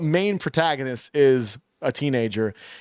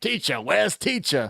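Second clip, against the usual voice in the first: put-on pirate accent and voice; 3 semitones higher than usual. Retelling how a character in a film talks: imitating a pirate accent. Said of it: "he talks like a pirate or whatever".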